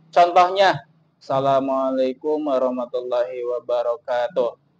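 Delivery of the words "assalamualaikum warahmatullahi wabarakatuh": low, flat monotone with no rise or fall. Teaching event hosts to avoid monotony, example of flat monotone. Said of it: "itu adalah contoh suara yang monoton".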